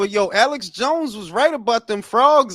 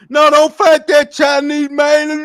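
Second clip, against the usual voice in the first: very loud, sobbing, tearful, begging tone; 4 semitones higher, 8 dB louder than usual. Retelling a call to a boxing show: imitating a caller crying. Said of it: "the dude called in crying".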